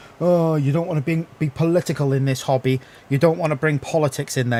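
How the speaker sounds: normal talking voice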